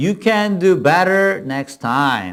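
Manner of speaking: very slow, careful model-style English phrasing. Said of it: "그래서 그 표현".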